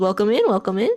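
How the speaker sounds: put-on old dwarf man voice. Voicing the shopkeeper greeting a player entering the liquor store: older dwarf man voice. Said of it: "an older dwarf man".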